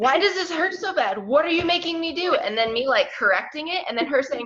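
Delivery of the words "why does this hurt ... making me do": put-on high-pitched yelling. Retelling how Lindsay yelled during a stretching session: imitating Lindsay yelling. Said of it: "Lindsay, like, yelling at me and saying".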